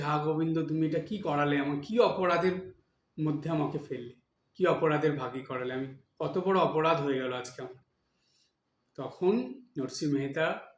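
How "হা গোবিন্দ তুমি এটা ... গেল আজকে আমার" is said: normal talking voice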